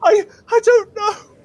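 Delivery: very high, loud, terrified sobbing stammer. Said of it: "speak up".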